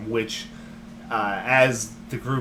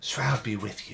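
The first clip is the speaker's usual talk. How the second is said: soft, hushed, close half-whisper; 6 dB quieter than usual. As a character hugging the player's character, half-whispering in someone's ear. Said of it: "she whispers in your ear".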